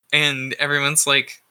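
ordinary delivery

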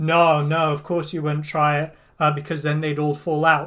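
ordinary delivery

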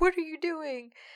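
high, loud, panicked freaking out. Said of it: "he starts freaking out".

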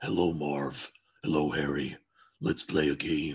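very low, slow, drawn-out doll voice. Imagining the doll from a fan theory speaking: Jigsaw doll voice. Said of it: "I just imagined the doll like".

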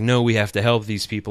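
normal talking voice

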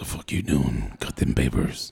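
bossy put-on voice. Retelling being put to work cutting papers at D&D night, in a boss voice. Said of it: "That's my boss voice".

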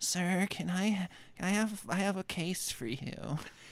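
thin, airy voice. In a detective bit, a client comes into the office and speaks, wispy voice. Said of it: "a wispy voice, he said".

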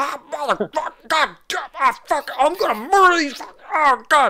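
furious, rattled-off, very high and fast. Game master voicing the guy who stopped firing in the other room, cussing up a storm. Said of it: "you hear him cussing up a storm".

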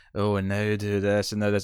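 sexy voice. Describing how erotic instructions would sound, in a sexy voice. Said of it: "being all sexy".

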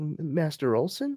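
tiny, small, high voice, stuttering and stammering. Recapping a scene, voicing a little voice calling to an old man, stuttering. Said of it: "a little voice kind of stutters".

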